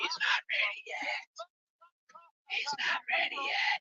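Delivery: deliberate, slow, very quiet hushed whisper. Picturing Triple H telling someone privately about Randy: whispering like Triple H. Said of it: "I could definitely see Triple H whispering".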